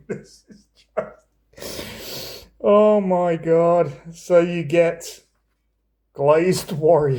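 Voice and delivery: words breaking up with giggles, laughing. Going through Dungeons & Dragons archetypes, the speaker is laughing while talking. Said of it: "I'm sorry, I'm laughing".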